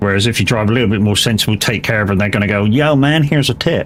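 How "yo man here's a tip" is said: put-on American accent, high and slow. Acting out a taxi passenger handing over a tip, american accent. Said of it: "I don't know why I use the American accent again".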